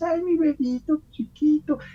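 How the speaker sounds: put-on very high, slow, cutesy baby-talk voice. Showing the little voices people use when talking to small children; cutesy baby-talk voice. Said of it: "hacemos tonitos con los niños".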